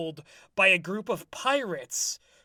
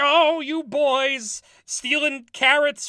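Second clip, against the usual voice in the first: put-on matronly old nanny-goat voice, high and drawn out; 7 semitones higher, 7 dB louder than usual. Describing the Skag Boys' trouble, speaker voices their mom: matronly old goat mom voice. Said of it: "old like matronly goat mom who's like".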